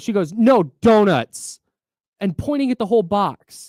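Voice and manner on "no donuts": loud shouting, raised voice. Retelling how the donut lady corrected an order: imitating a donut lady shouting. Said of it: "I'm getting shouted at".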